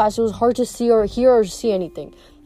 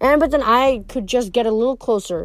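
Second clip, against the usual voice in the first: ordinary delivery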